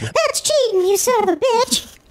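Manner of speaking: very high, squeaky character voice. Imitating Jamie scolding someone for cheating: impression of Jamie. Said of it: "Let me do an exact impression of Jamie".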